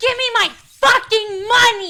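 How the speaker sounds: demanding, shrill, drawn-out, top-of-the-lungs scream. Speaker retelling a woman demanding her money at the counter, retelling a scream at top of lungs. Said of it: "At the top of her lungs".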